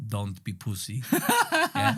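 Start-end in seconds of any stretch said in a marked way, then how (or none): 0.1-1.0 low put-on Polish accent with deadpan delivery. Retelling what a man said while wrapping the speaker's knee, in his Polish accent. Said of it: "in his Polish accent".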